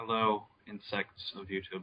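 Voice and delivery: monotone, droning voice. Greeting the viewers on joining the call: flat monotone voice. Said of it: "what's up with the monotone?".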